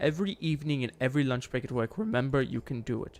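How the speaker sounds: ordinary talk, nothing marked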